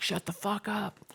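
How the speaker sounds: furious angry yell, pitched way up. Retelling how they once confronted people: imitating own angry yell. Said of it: "in a very angry way where I was like".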